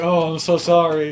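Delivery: put-on big fat man voice. Voicing a man who spilled his hot dog on a player: voicing a big fat man apologizing. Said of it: "some big old fat man just kind of blunders into you".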